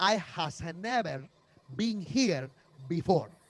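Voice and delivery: fake broken-English accent, no specific region. Retelling own words about parking: imitating own fake broken-english accent. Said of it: "this accent I was doing was not region specific".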